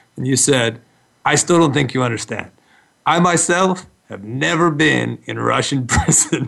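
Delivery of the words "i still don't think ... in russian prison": put-on English with a Russian accent. Retelling how a man asked him to visit a prison: imitating Leo's Russian accent. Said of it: "I'm doing an impression of you".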